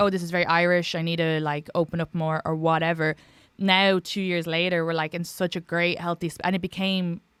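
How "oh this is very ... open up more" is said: plain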